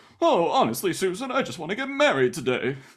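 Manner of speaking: bumbling, very high-pitched professor voice. Retelling a movie scene, imitating Cary Grant's bumbling professor. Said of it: "bumbling professor who's always like".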